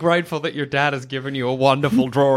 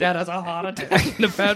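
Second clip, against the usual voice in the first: ordinary talk, nothing marked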